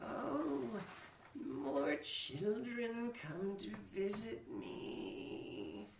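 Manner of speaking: croaking, very high-pitched voice. Narrating a scene, voicing someone speaking from the alcove: very croaky voice. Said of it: "It's this very croaky".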